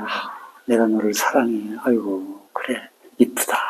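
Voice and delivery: soft, hushed, tender consoling tone.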